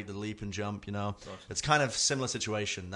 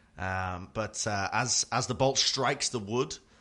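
ordinary delivery

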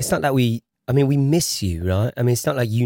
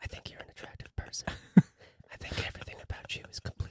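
soft, hushed, breathy ASMR whispered murmur. Joking about pitching in a way that gives tingles: mock asmr voice. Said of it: "This is A S M R".

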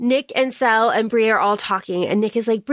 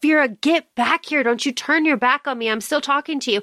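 acted angry outburst, higher pitched; 3 semitones higher than usual. Retelling a character's outburst at Vera: imitating an angry character. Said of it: "And she's so angry. She's like".

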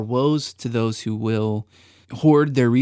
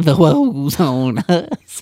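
very slow, drawn-out, put-on Southern drawl; 5 semitones higher, 7 dB louder than usual. Repeating a co-host's phrase back to him, in an imitated Southern accent. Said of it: "You went Southern with it".

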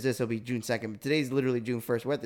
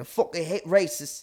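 put-on English accent, higher; 5 semitones higher than usual. Quoting a video of John Boyega in his voice. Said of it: "do that in his voice".

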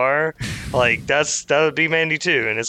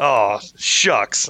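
put-on choked-up voice, lower pitch; 3 semitones lower than usual. Retelling how someone got choked up on camera: choked-up Brendan Fraser impression. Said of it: "A very Brendan Fraser way".

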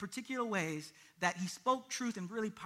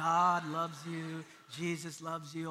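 low, slow, flat, unhurried preaching monotone; 4 semitones lower than usual. Imitating a preacher holding the Bible, Charles Stanley monotone.

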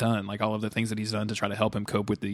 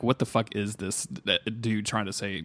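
ordinary talk

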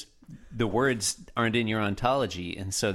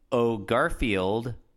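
normal talking voice

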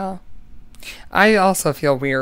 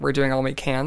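plain

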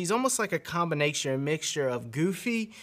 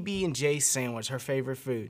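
normal talking voice

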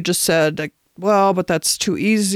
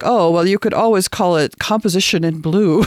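mock-sarcastic delivery. Recalling an art instructor's remark to the speaker in college, imitating a sarcastic remark. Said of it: "sort of sarcastically said to me".

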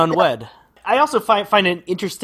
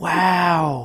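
put-on wow drawled slowly with a Southern-tinged accent. Imitating a movie line from Nicolas Cage: Nicolas Cage saying wow like Owen Wilson. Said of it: "He's like".

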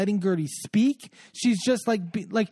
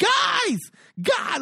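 very high scream at full lungs; 13 semitones higher than usual. Retelling a fight at a big party, imitating Lisa screaming at the top of her lungs. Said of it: "like on the top of her lungs".

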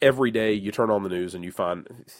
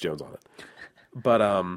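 normal talking voice

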